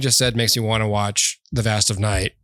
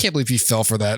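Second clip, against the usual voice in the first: put-on mocking, ridiculing tone. Retelling teasing her after she went to Snopes: acting out mocking ridicule. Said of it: "making fun of her".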